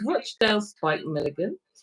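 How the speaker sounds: ordinary talk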